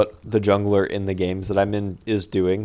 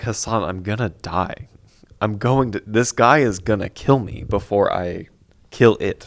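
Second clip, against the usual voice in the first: mock-panicked tone. Recounting a game fight, calling out to a teammate, retelling own panic. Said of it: "I'm panicking".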